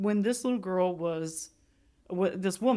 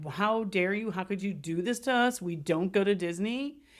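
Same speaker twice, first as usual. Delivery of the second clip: mock-crying, put-on tearful carrying on. Retelling a mother's reaction to her daughter's news, imitating a crying mom. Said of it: "the mom is like crying and carrying on".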